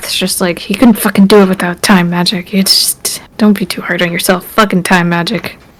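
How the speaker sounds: muttered voice. Voicing Zorana after being thanked by a companion, Zorana muttering under breath. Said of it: "Zorana mutters under her breath".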